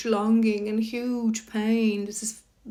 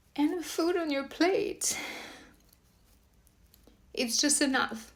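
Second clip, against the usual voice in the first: emotional, moved, breathy, almost whispered; 6 semitones higher, 7 dB quieter than usual. Talking to an audience, the speaker admits they are getting emotional. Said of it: "I'm getting emotional".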